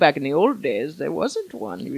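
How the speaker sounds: put-on elderly woman voice. Explaining why the Earth 2 fan page was created, in an old lady voice. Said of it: "my old lady voice".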